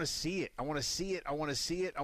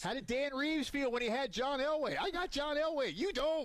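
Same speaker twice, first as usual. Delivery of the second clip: shrill, fired-up, very high-pitched shouting; 10 semitones higher than usual. Speaker on a post-game show, fired up arguing about quarterbacks: yelling. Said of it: "I'm sorry. I'm yelling".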